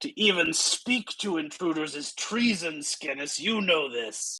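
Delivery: growling wolf voice, yelled. Narrator voicing a wolf creature yelling down at Skinnis, growly wolf voice yelling. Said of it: "yell down in its growly wolf voice".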